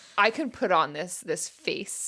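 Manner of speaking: put-on super serious delivery. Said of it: "super serious".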